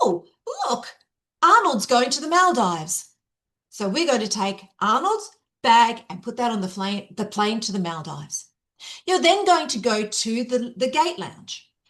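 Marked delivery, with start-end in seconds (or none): none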